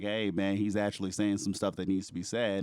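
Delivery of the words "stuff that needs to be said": ordinary talk, nothing marked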